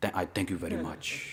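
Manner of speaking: put-on old guru voice. Telling others how a man thanked you, repeat his words sounding like Prabhupada. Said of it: "sounded like Prabhupada too".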